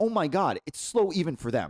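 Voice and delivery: ordinary talk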